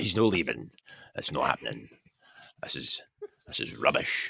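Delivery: put-on breathy, furious, whispered Scottish accent. Retelling how supporters reacted to the visa trouble: imitating angry Scots. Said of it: "And they were like".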